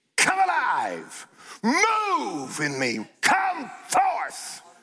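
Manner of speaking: authoritative, commanding, swooping, "move" drawn out. Speaker shows how to speak to your gift, in a commanding voice. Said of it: "You tell it what to do with a commanding voice".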